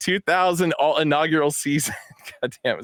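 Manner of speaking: talking through helpless laughter, words breaking up. Describing a hat's side patch to the others: laughing while talking. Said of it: "I'm just laughing too hard".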